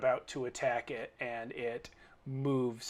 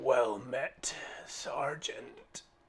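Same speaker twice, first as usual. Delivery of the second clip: rasping, hoarse female voice. Voicing a rider greeting a sergeant: hoarse female voice. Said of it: "you hear a hoarse female voice say".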